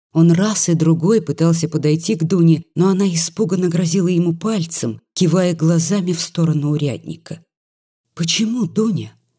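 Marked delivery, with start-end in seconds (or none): 8.1-9.1 high, astonished, surprised half-whisper. The doctor, warned off by Dunya, asks her in a surprised half-whisper. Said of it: "удивленно шептал доктор".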